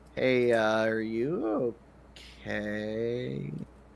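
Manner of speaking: soft, timid, sheepish, anxious voice, okay drawn out. In a role-play, the player's character asks him directly: sheepish, nervous tone. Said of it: "in a very sheepish uh, and nervous tone".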